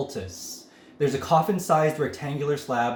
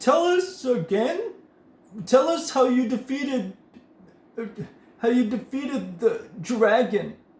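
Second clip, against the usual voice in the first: put-on very high slurred drunk mumble; 9 semitones higher than usual. Game master voices a drunk halfling stumbling toward the players: drunk, slurred speech. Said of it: "He slurs his speech and can barely stand".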